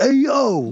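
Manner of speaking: put-on very high, full New York accent. Imitating how an actor plays his character: New York accent as Hank Azaria. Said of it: "he's so New York".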